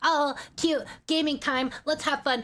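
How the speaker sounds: sweet, cutesy VTuber-style streamer voice. Greeting viewers before talking drama, putting on a VTuber voice. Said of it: "Let me put on a VTuber voice".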